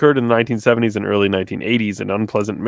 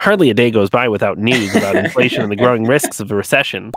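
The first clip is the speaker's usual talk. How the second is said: put-on voice, pushed a little through the nose. Reading an article aloud as its writer might sound: Ben Shapiro voice. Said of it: "he probably sounds like Ben Shapiro".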